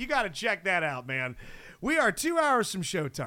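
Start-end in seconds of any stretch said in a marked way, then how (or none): 0.0-1.4 put-on grinning and laughing voice. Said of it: "he's laughing. He's got this shit-eating grin".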